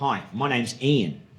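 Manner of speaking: imitated, put-on Australian accent. Retelling meeting a man in his company's uniform, in an australian accent. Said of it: "In an Australian accent".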